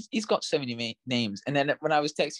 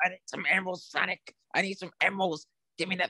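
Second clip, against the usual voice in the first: angry villain voice, high and level; 7 semitones higher than usual. Speaker talking about the Sonic game acts out Dr. Robotnik; mock-angry Dr. Robotnik impression. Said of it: "I can't do his voice".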